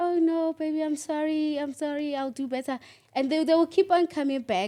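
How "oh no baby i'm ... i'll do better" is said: slow, put-on meek and apologetic pleading tone. Acting out a partner begging after being shouted at: imitating a submissive plea. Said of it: "And then when you say".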